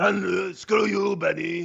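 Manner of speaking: rough, drawn-out, slow shouted line. Showing the trick to an impression, yelling it: yelling Arnold Schwarzenegger impression. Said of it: "the trick to Arnold is learn how to yell it".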